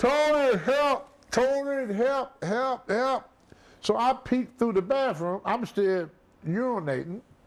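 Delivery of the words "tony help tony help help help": put-on very slow, high, stretched-out hollering cry. Retelling a friend calling out from the next room: imitating someone hollering for help. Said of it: "And Fred is hollering".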